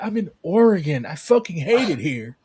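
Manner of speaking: imitated depressed voice. Speaker mimicking how the listener sounded earlier, imitating a depressed voice. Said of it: "you sounded so depressed".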